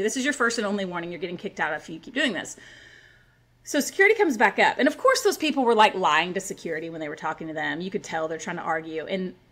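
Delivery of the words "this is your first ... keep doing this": usual speaking voice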